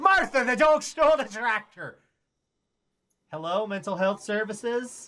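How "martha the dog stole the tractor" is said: really bad, put-on Scottish brogue. Playing a grandpa in a comic bit, in a really bad Scottish brogue. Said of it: "really bad Scottish brogue".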